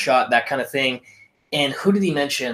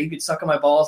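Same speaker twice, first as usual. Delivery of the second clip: plain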